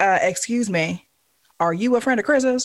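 fiery, sassy delivery, all attitude. Retelling meeting a friend's spitfire auntie at the hospital: imitating aunt's full neck attitude. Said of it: "full neck attitude".

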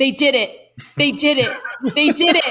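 put-on, high shouting, over and over. Recalling getting a phone notification at the office, retelling a shout. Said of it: "I just started shouting".

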